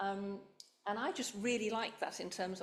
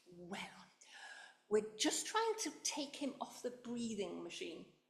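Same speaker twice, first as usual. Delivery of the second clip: mock condescending nurse voice, sing-song; 2 semitones higher than usual. Nurse retelling her reply to a visitor asking about a patient, mock patronising nurse voice. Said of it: "in my most patronising nursing voice".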